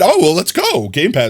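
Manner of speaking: high voice breaking and cracking upward. Reacting to someone getting a Game Pass voucher, voice cracking. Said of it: "my voice crack".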